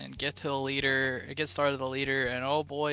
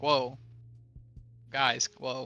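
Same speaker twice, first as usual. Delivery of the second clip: calm, easing, soothing "whoa". Facing a group of people, doing a Chris Pratt impression from Jurassic World. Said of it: "Chris Pratt impression".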